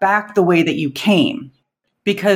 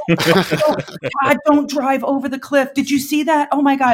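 put-on scream, higher pitch; 8 semitones higher than usual. Retelling a passenger screaming from the back seat on a cliff road: imitating someone screaming. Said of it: "she was just screaming it in the back".

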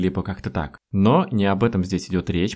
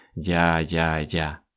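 я-я-я said tired and fed-up; 3 semitones lower, 3 dB quieter than usual. Demonstrating an intonation meaning stop repeating yourself: weary я-я-я. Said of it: "с такой вот интонацией, с утомительной «я-я-я»".

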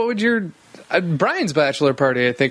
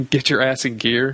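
plain

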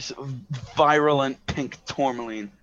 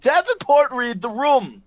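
shrill, piercing, very high, loud shout; 10 semitones higher, 5 dB louder than usual. Telling a story, imitating the director yelling at someone: retelling a yell. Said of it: "the director just yells at him".

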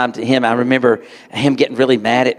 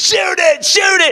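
put-on, very high, stretched-out, drawn-out screaming. Speaker recalls Dad urging him to shoot a rabbit, retelling a scream. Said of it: "he's screaming".

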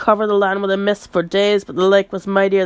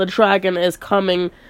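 ordinary delivery

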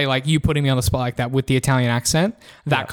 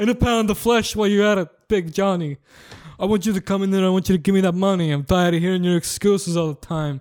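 put-on Italian gangster accent, higher; 6 semitones higher than usual. Threatening Big Johnny for money: Italian gangster voice. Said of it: "I'm an Italian gangster".

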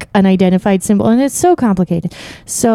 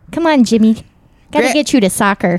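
put-on Midwestern accent, motherly woman's voice. Playing a mother hurrying jimmy off to soccer: midwestern mom voice. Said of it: "You do a good midwestern mom".

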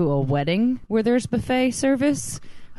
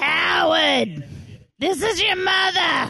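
put-on high old chain-smoker woman voice; 9 semitones higher than usual. Trying out a voice on the show, old lady smoker voice. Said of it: "Sound like an old lady who smokes too many cigarettes".

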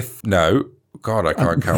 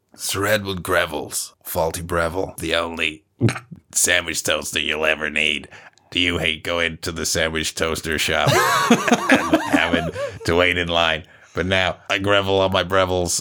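put-on creaky vocal fry advert voice; 3 semitones lower, 4 dB quieter than usual. Doing a made-up product advert in a vocal fry advert voice. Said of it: "just get the vocal fry back up".

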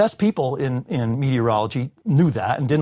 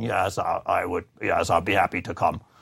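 low, flat, creaky, dull, unvarying drone; 6 semitones lower, 4 dB quieter than usual. Recalling phoning a professor to invite him to the class: Professor Lorenz's monotone. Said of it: "he would say in his monotone".

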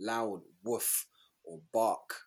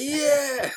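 shrill, joyful, very high, loud screaming shout; 10 dB louder than usual. Imagining a random gym person answering the screen: imitating someone screaming. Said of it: "screaming out".

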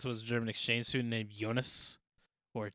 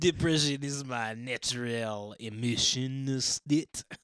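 bad fake French accent, louder; 4 dB louder than usual. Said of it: "We sound like a bad impression of him".

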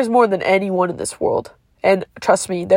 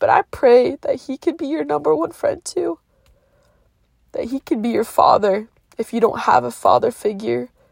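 tearful, weeping voice, crying through the words; 4 semitones higher than usual. Speaker sharing his faith with listeners, crying while speaking. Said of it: "sorry I'm crying so much".

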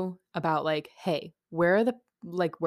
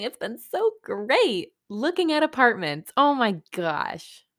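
affected, high, swooping put-on voice; 6 semitones higher than usual. Claire, talking to a listener, in a put-on voice. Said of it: "Claire, why are you talking like that?".

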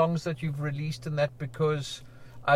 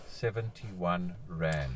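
slow speech, lower pitch; 10 semitones lower, 8 dB quieter than usual. Speaker states what an artist at the waterfront earned, saying it slowly. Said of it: "I'm going to say it slowly".

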